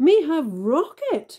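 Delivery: very high, loud, triumphant crowing. Two characters trade boasts; read one's reply, crowing. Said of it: "crowed Inch".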